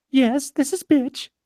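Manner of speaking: tiny, sugary, sweet little voice, very high. Retelling a collection-agency call, quoting the woman who answered, sweet little voice. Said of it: "she says in this sweet little voice".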